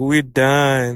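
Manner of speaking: ordinary delivery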